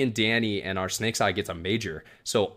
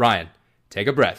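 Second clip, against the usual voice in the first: put-on calming, loud coaching voice, louder; 6 dB louder than usual. Retelling a teammate coaching from behind during a one-on-one: Blake's calming, loud voice. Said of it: "I hear this calming, loud voice".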